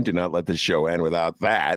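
ordinary talk, nothing marked

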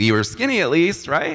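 high, loud, giggly, joking through laughter.

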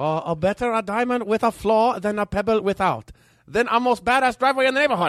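exaggerated, bad put-on Chinese accent. Rereading the Confucius line when asked to: bad Chinese accent. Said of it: "do that with a Chinese bad accent".

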